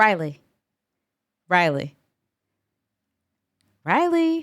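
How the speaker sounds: shouting. Trying to wake someone from hypnosis, shouting a name. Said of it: "My apologies for shouting".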